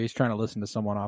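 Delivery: normal talking voice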